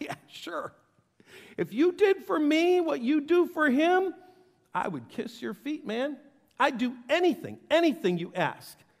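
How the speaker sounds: put-on, dripping, cynical sarcasm, high and taunting. Retelling Satan's reply to God in Job: imitating Satan's sarcasm. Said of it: "the sarcastic of sarcastics says".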